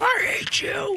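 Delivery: very high movie-hero cry, pushed way up. Joking with a co-host about a baseball home run, doing an Anakin Skywalker impression. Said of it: "It's my Anakin Skywalker impression".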